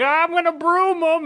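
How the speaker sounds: high-pitched mock threatening.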